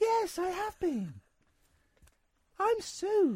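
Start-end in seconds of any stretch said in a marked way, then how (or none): 2.6-3.4 higher put-on breathy voice. Answering whether the voice was practiced: imitating Sue's voice. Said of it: "Have you been practicing that voice?".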